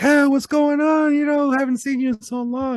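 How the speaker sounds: high, bubbly, gushing voice.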